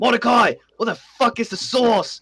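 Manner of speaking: mock very high-pitched shouting yell. Acting out a chick cooking in the kitchen: yelling. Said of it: "he's just yelling in there like".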